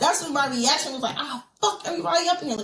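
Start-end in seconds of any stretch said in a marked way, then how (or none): 1.2-2.6 high-pitched, mock pissed-off, raging, furious shout. Retelling the reaction to a sister's death: retelling own angry reaction. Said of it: "I was pissed".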